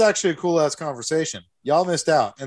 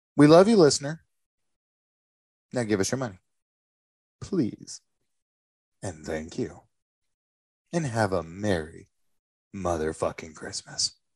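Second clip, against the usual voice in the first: menacing, far down low, hushed and quiet; 7 semitones lower, 5 dB quieter than usual. Host asks listeners for money at Christmas: plea that sounds like threats. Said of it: "it sounds like threats".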